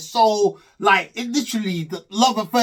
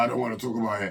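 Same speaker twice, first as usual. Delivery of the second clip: very husky voice dropped way down low; 9 semitones lower, 8 dB quieter than usual. Retelling what Kwame said when asked about the ceremony: imitating Kwame's husky voice. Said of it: "them man there's voice is just mad husky".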